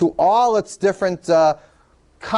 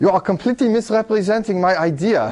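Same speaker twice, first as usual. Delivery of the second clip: bad, missed put-on British accent; 2 semitones higher than usual. Voicing Alan Turing calling in, in a bad Alan Turing impression. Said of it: "what a bad imitation. I can't do a British accent".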